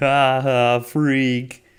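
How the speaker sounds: dopey, slow-witted creature voice. Quoting a character's line from an episode: Billy's tismy voice. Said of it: "in his tismy voice".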